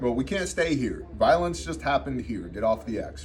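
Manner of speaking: normal talking voice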